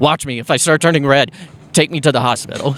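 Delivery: ordinary delivery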